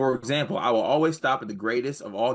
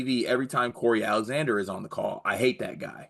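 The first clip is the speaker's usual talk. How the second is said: usual speaking voice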